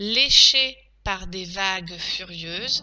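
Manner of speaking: slow, spaced-out dictation reading. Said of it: "Passons maintenant à la dictée".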